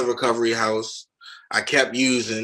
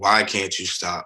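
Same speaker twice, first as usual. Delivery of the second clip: put-on tearful, crying voice, slower; 4 semitones lower than usual. Retelling a kitchen moment with mom and sister, retelling sister's tearful plea. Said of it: "my sister just crying and asking me".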